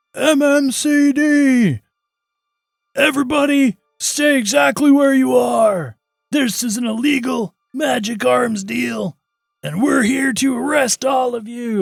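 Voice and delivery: very high, very loud shout. Voicing an officer announcing an arrest at an illegal arms deal: yelling a police warning. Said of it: "And he just kinda yells it out".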